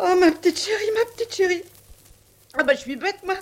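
tearful, choked up, crying with emotion. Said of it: "Comment, vous pleurez?".

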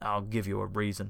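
growling. Reading a story, a brute answers Richard's refusal: growled. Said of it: "he growled".

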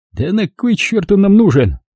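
scornful, contemptuous, high-pitched. The driver answers Klyuev about the sleeping man: contemptuous. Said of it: "презрительно сплюнул водитель".

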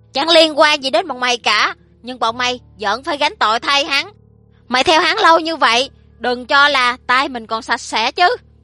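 shouting loudly. A boss answers a worker who just shouted, shouting just as loudly. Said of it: "cũng lớn tiếng không kém".

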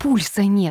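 scared, faltering, halting babble. Reading a story, Maria grabs Varya's wrist as she lies on the floor; frightened babble. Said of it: "испуганно пролепетала".

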